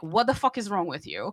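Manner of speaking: usual speaking voice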